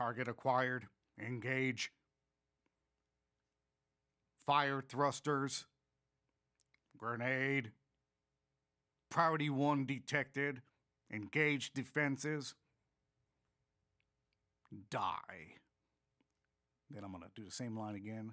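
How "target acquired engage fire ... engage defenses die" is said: mechanical robot voice, very slow and loud. Running the basic lines for Tetramite, line one, robotic Tetramite voice. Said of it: "when I'm going for the robotic stuff".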